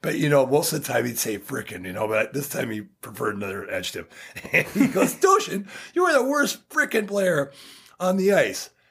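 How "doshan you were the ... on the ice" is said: play-acted furious rant, high-pitched and swooping. Retelling how Herbie, really pissed, told him off: imitating Herbie, furious. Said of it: "When Herbie was really pissed".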